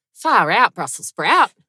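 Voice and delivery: very loud, high Australian accent. Showing how a real Australian person would say the rhyme, in an Australian accent. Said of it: "Really Australian person would say".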